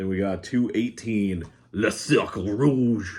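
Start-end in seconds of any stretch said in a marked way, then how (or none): 1.7-3.2 horrible fake French accent. Listing a French movie from a collection, horrible put-on French accent. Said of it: "That was an offensive, horrible impression".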